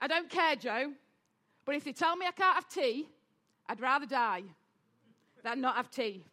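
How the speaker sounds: put-on very broad, thick Yorkshire accent on every word. Quoting his dad's exact words to him, joe, in a very yorkshire accent. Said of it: "in a very Yorkshire accent".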